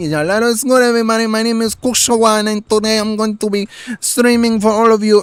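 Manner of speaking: high, put-on Spanish accent. Showing the accent people expect from a Puerto Rican: put-on Spanish accent. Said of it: "the Spanish accent that people expect me to have".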